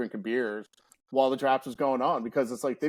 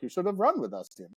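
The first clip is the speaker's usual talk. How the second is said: bad, terrible French-Canadian accent; 6 semitones higher than usual. Retelling what others said coming back from a run: terrible French Canadian accent. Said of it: "I'm doing a terrible French Canadian accent".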